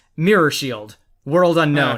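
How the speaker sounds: ordinary delivery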